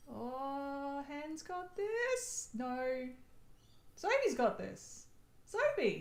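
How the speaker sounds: very slow, high, drawn-out, astonished, surprised exclamation. Reacting to another player's final score: sounding surprised. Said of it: "Why are you so surprised?".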